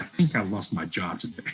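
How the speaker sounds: ordinary talk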